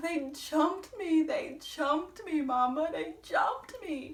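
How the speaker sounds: acted, tearful sobbing and bawling. Retelling what they said to their mama, imitating own bawling. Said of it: "And I just started bawling".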